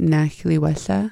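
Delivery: ordinary delivery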